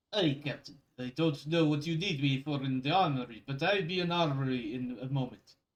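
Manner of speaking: speaking in a bad Russian accent. Voicing Cobblins answering the captain's radio call, in a bad Russian accent. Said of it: "my Russian accent sucks".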